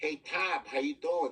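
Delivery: imitated Chicago accent.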